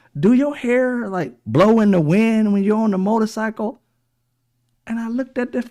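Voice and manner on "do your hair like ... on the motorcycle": street-style way of talking.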